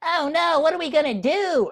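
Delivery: put-on very high, squeaky little kid voice. Retelling childhood play with action figures, doing the voices: captured kid voice. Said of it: "the kid being captured is like".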